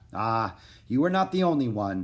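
ordinary delivery

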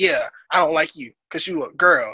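ordinary delivery

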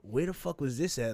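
ordinary delivery

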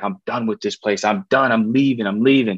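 acted crying, tearful outburst. Retelling leaving in tears with dad: retelling tearful outburst. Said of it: "crying, all emotional with my dad".

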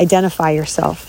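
ordinary talk, nothing marked

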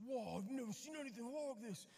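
put-on South African accent. Retelling what the safari guide said, imitating the guide's accent, sounding Australian. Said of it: "now I sound like I'm from Australia".

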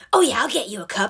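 delivery loaded with attitude. Retelling mom's reply to a request for a cup: imitating mom answering with attitude. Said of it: "she responded with attitude".

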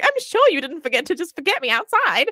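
very high, squeaky voice. Speaker quotes a line from the audiobook, imitating Betty's soft, squeaky voice. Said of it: "so soft and squeaky".

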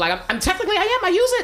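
very high-pitched, squeaky voice.

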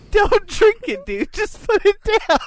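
very high, talking through hard laughter. Among friends, crying with laughter: laughing hard while talking. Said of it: "I'm crying so hard, y'all, from laughing".

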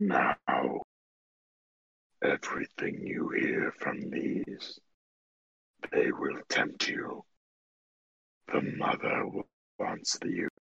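hushed, whispered dragon voice. The storyteller voices a dragon addressing the group, in a dragon voice. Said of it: "It is a dragon somewhere between young and adult. / It is a dragon somewhere between young and adult".

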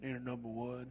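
very deep, manly voice dropped way down.

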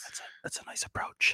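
hushed, whispered golf announcer commentary voice. Playing a golf announcer commenting on a shot: whispered golf announcer voice. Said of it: "do you usually whisper?".

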